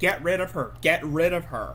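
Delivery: ordinary talk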